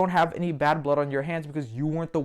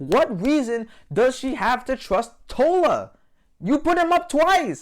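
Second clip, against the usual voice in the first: emotional, confrontational, high and raised voice; 9 semitones higher, 5 dB louder than usual. Questioning why a player chose to trust an ally, getting emotional and confrontational. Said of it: "I'm getting a little emotional".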